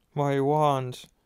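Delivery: shaky, trembling, quavering voice. Ron, beside an injured Harry, looking at his wand, in a shaky voice. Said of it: "Ron said in a shaky voice".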